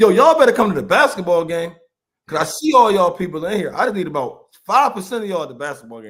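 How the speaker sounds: play-acted, high, loud, rousing shout. Retelling screaming at the fans from the field: retelling a scream at fans. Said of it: "I'm screaming at the fans".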